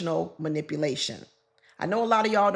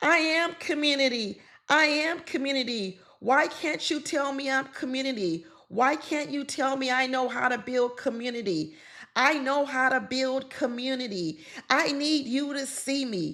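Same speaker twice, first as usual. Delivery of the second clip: high, tearful, crying and sobbing voice; 9 semitones higher than usual. Retelling a reality show cast member's meltdown: imitating someone crying in a meltdown. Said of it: "did she just have a meltdown and start crying and saying".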